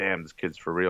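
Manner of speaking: normal talking voice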